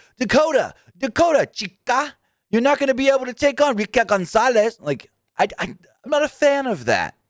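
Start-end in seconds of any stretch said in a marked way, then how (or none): 0.2-4.8 put-on sudden, very high South Texas Mexican accent. Showing what you dislike in her promos, imitating Raquel Gonzalez's South Texas Mexican accent. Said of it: "she's got this South Texas Mexican accent".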